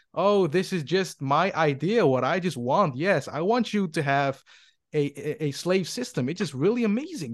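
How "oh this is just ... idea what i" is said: plain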